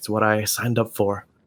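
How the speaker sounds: spoken with a sigh. Player voicing their character Dolus as he puts on a glove, with a sigh. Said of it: "let out a sigh".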